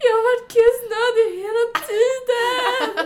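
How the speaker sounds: high, slow, sobbing, tearful voice. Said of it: "börjar gråta".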